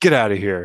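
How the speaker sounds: mean, nasty, dismissive brush-off tone. Retelling a four-year-old sending a game friend away: imitating a child acting mean. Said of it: "he gets all mean".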